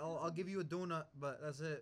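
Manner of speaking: attempted Canadian accent that misses. Joking with friends, suggesting what someone should have said, attempted Canadian accent. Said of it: "saying it in a Canadian accent".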